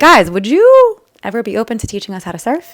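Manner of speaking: eager, loud hollering with a swooping pitch. Retelling calling out to surfers on the beach: imitating herself yelling. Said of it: "yelling to the surfers".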